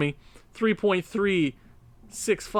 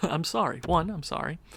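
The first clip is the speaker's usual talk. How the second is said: ordinary talk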